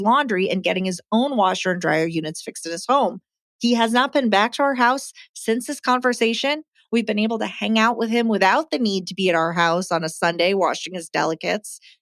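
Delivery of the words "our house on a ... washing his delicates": ordinary talk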